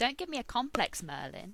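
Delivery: light, jokey, teasing tone. Arthur, posing for wedding pictures, speaks to Merlin: joking. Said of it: "Arthur said jokingly".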